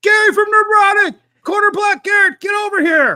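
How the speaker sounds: very high, loud, shrieking scream. Retelling calling out to people walking through a crowd: imitating own scream. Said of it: "I started screaming".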